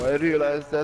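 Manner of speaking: ordinary delivery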